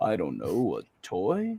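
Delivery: deep, low, slow voice with swooping pitch. Retelling an interview answer, doing the voice of Orson Welles. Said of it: "so I can do this voice right".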